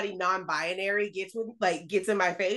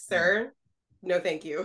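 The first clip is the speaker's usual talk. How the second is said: slow, patronizing, dismissive, condescending delivery; 3 semitones lower than usual. Showing how to turn down someone with sir: imitating own condescending tone. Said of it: "my favorite way to be condescending".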